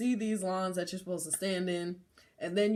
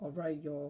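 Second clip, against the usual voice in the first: mock calm, quietly menacing voice, quieter; 3 semitones lower, 6 dB quieter than usual. Retelling a woman addressing about fifty people on a bus: imitating a calm, quiet menace. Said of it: "menacing voice, just calm and quiet".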